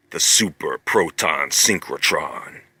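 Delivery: deep, low-pitched voice. Saying the name of an accelerator ring for fun: deep voice. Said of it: "you gotta say that with a deep voice".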